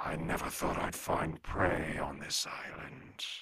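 breathy whisper. A game master voices a fast-moving shadow speaking to the players, in a different voice. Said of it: "in a different voice".

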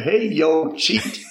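put-on Tennessee-style southern accent. Quoting how he used to greet the speaker, imitating a southern accent. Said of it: "he had that southern accent".

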